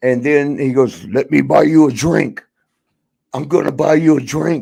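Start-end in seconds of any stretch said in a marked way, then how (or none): 1.1-4.6 big, towering, lumbering comic-book brute voice. Retelling what Hulk said to a woman at a bar: imitating Hulk's voice. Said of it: "that Hulk voice".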